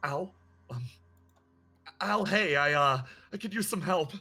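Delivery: frightened and breathless. Voicing a character calling for help while running: panicked, out of breath. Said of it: "you hear the panic in her voice".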